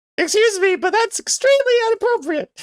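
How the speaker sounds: very high, loud, put-on woman's voice. Performing a comic character's line after being asked: lady voice. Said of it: "Let's hear your lady voice".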